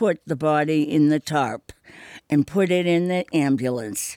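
plain

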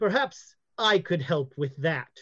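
amplified, quick, disembodied voice over a sound system. Game narrator voices a headdress speaking to the players; amplified headdress voice. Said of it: "You hear the voice of the headdress say".

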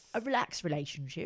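attempted British accent. Chatting with another speaker, trying a British accent. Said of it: "I'm going to stop trying to do British accents".

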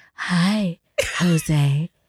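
seductive, sultry tone. Speaker shows how they sometimes greet jose, in a sultry voice. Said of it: "sometimes I use my sultry voice".

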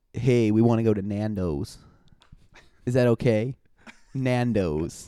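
slow, put-on American accent. Asked to do an American accent, imagining asking to go somewhere: put-on American accent. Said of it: "Do an accent, an American accent".

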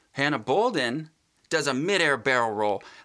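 ordinary delivery

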